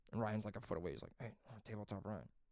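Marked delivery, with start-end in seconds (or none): 1.2-2.2 put-on whisper, lower and quieter. Retelling how a friend whispered to him: imitating a whisper. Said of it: "Jerry was, like, whispering to me".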